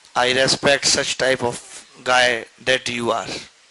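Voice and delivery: mock-solemn, very slow, drawn-out delivery.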